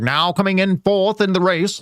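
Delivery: put-on old-time radio announcer voice with a Mid-Atlantic accent. Joking about streaming from 1915: put-on Mid-Atlantic accent. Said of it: "I'd have to be doing that New Atlantic voice".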